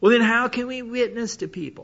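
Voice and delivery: high, whiny little voice. Imitating people who say junk about it, with a mimicked whiny voice. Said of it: "with a little whine in their voice".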